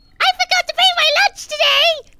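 put-on very high, shrill, loud, screaming anime girl voice. Speaker recalls a character who shouts everything she says, screaming like Sailor Moon. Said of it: "screams everything she says".

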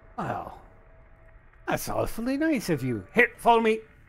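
salty, loud, swooping pirate voice. Storyteller voicing a character in the catacombs answering the party, in a pirate voice. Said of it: "I don't know why he sounds like a pirate".

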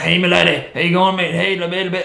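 heavy, hard-to-follow put-on Irish accent. Retelling what a man said at the pub: imitating a thick Irish accent. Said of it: "a really thick Irish accent".

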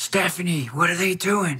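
hushed, quiet muttering under the breath. Retelling a muttered question to a companion after walking away, under the breath. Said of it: "Like under my breath".

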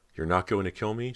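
choked, high-pitched, words forced out. Cody, hesitating at the door while her sister Callie watches, choked out. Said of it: "She choked out".

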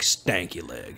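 strangled, gagging, choked, breathy whisper. Showing how to say stanky leg, in a choked voice on stanky leg. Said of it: "You got to say it like you're choking on cottage cheese".

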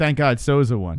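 plain

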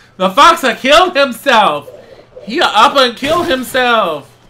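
silly alien broken speech. Reacting while playing a game, sounding like Jar Jar Binks. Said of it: "I sound like Jar Jar Binks".

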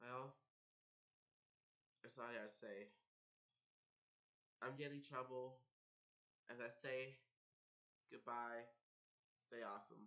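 crying, tearful voice. Signing off a YouTube video to subscribers, crying. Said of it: "I'm actually in tears. I can't stop crying".

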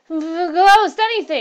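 wild, high-pitched, very loud outburst. Hurst, answering Malcolm after seeing the ghost, speaks wildly. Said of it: "said Hurst wildly".

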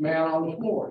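normal talking voice

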